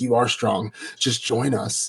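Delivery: put-on huffing, puffing, out-of-breath speech. Retelling what a character said after a fight: imitating someone huffing and puffing. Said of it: "huffing and puffing".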